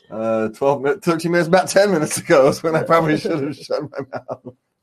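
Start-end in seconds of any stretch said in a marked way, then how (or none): 1.0-4.5 fast, laughing hard through the words. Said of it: "me crying because I'm laughing so hard".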